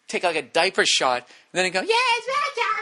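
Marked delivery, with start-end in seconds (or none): 1.8-2.7 put-on very high little-kid chirp. Complaining about kids at games, the speaker imitates them: high-pitched kid voice. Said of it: "High pitched voice".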